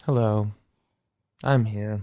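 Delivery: put-on voice-assistant voice. Showing how a guy he knew used to talk, Siri voice. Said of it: "He would talk like this".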